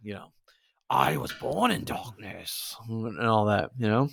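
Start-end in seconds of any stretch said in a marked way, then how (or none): 0.9-2.7 put-on, slow, creaky, rough, dragged-out voice. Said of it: "even when you do that voice".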